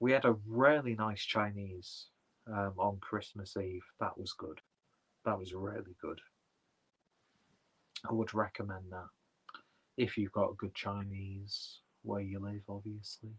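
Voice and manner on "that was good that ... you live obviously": gentle, soft, soothing, calming voice. Talking about a Christmas Eve Chinese meal: gentle, soothing voice. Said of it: "I've suddenly adopted a very gentle, soothing voice".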